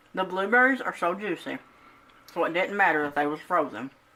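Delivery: talking with mouth full. Tasting a baked treat on camera: talking with mouth full. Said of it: "I'm so sorry. Mouthful".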